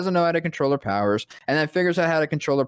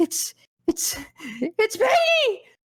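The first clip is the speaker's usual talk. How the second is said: put-on teary cry, very high, stammering. Retelling own words while crying at a movie: imitating own emotional outburst. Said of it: "I was so emotional".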